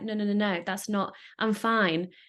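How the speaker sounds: ordinary talk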